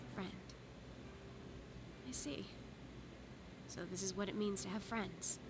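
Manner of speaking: crestfallen, hopeless, breathy, disappointed half-whisper. Reacting to being called only a friend: disappointed. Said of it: "She sounds so disappointed!".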